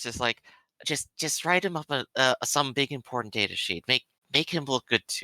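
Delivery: hushed, scheming, conspiratorial half-whisper. Leaning in on her, speaking in a conspiratorial half-whisper. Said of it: "try to to almost conspiratorial whispers".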